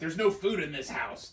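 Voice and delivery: loud, mock, exaggeratedly mean griping. Imitating the other speaker complaining: mock mean caricature of partner. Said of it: "You make me sound, like, really mean".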